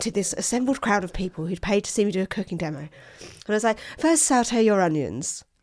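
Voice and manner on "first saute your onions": put-on, very nicely spoken, slow on-air voice. Speaker retelling addressing a paying crowd at a cooking demo, nice Radio 4 voice. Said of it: "I put my nice Radio 4 voice on".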